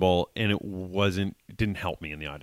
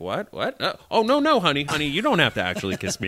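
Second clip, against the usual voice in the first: high woman's voice with swooping pitch; 7 semitones higher than usual. Speaker retelling how a woman reacted when he came toward her at the kiss part: imitating the woman. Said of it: "and she was like".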